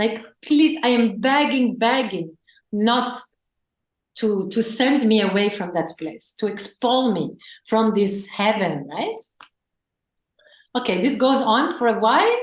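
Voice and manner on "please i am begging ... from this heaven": ordinary delivery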